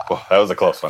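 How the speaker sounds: breathless, out of breath. A show host opens the episode just after a close call, out of breath. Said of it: "I'm a little out of breath".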